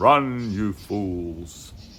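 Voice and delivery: strong, manly voice with "fools" drawn out. Recounting a strong voice they heard, the speaker quotes it: Gandalf voice. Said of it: "like Gandalf from Lord of the Rings".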